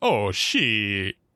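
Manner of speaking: deep put-on character voice. Describing a show where Bigfoot speaks, quoting Bigfoot, deep Bigfoot voice. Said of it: "done in that deep".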